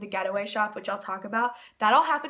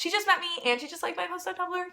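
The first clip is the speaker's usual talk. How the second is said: high-pitched, excited disbelief. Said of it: "I was like".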